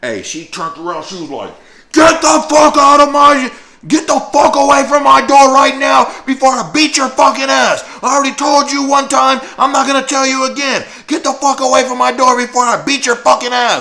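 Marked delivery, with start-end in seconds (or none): 1.9-13.8 very high, shrill, furious, raging scream. Retelling how a woman yelled at her mother at the door, imitating angry yelling. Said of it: "getting loud with it".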